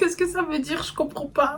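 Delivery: high-pitched, soft, confused, baffled murmur.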